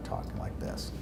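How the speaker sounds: very soft, weak, breathy near-whisper. A speech therapist shows how Parkinson's patients talk, in a very soft voice. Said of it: "is the soft voice".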